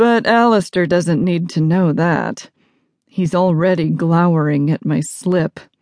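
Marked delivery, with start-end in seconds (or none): none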